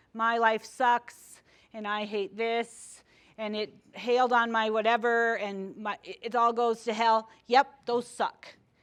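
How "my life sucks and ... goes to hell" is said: normal talking voice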